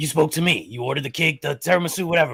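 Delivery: put-on rough, gruff voice. Retelling how a customer insisted he spoke to a man, quoting the woman: imitating a rough voice. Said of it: "a rough voice".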